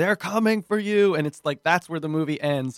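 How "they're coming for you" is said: put-on horror-film scream, high and loud. Recounting a film's ending, acting out the character's scream. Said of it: "he's he's screaming".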